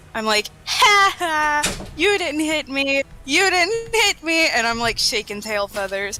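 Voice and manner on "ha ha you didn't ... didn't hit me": high, slow, mock jeering, gloating taunt. Taunting the enemy who tried to shoot the character: mocking taunt. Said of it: "to mock the, um, the, the guy".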